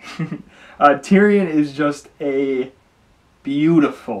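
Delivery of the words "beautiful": beautiful drawn out, louder, heavily stressed. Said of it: "I stress the word beautiful".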